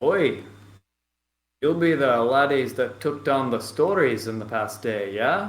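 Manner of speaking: put-on slight Irish accent. Voicing the main man turning to greet the listeners, Bartholomew, slight Irish voice. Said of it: "more of a slight Irish voice".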